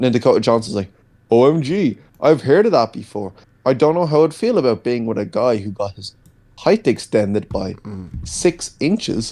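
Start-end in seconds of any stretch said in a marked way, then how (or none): 1.3-9.3 stilted, machine-like, robotic delivery. Mocking a movie scene's dialogue: robotic Dakota Johnson imitation. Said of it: "It's so robotic, man".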